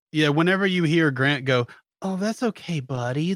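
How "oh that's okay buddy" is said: put-on patronizing, condescending baby-talk voice. Show a listener how Grant talks when he gets upset, imitating Grant's condescending baby talk. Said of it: "that baby girlfriend talk".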